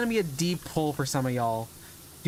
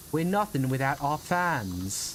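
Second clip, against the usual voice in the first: fake British accent, fans drawn out. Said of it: "whenever I do a fake British accent".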